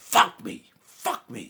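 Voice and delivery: loud, mock angry outburst. Retelling walking out after no appointment was possible: imitating own angry snapping. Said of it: "I snapped".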